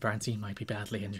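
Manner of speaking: barely audible, grave, hushed commentator-style tone. Retelling how wrestling commentators covered an injury: imitating hushed commentator tones. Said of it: "hush tones".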